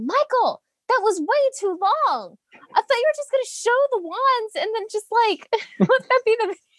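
mock screaming. Retelling a complaint about a long wand video: retelling own screaming. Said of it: "I remember screaming".

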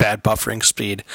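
plain

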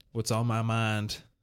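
with a sigh. A man sitting on the bed facing the others begins to speak, sighing. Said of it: "he sighed".

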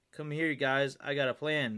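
plain reading voice

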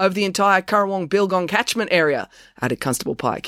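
plain

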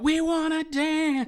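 mock scream at a very high, shrill pitch. Recounting a performance, quoting a woman screaming from a departing police car: retelling a scream. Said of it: "she just still screams out".

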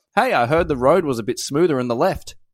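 plain

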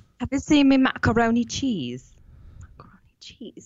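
English-style British accent. Asked by another speaker to say it like a Brit, in a British accent. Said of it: "Say it like a Brit".

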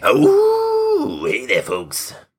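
stretched "oh", swooping way up, very high, slow. Saying people love a celebrity's voice, then imitating it: Wolfman Jack voice. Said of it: "people just love Wolfman Jack's voice".

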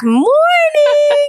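tiny, very high, small squeaky little voice. Retelling walking in behind a friend who says good morning: imitating her own little voice. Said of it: "my little voice in the back".

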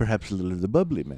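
put-on suave, smooth, full-on British accent. Retelling the leprechaun's smooth line offering the bubbly: Warwick Davis British accent. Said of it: "using his full-on Warwick Davis British accent".

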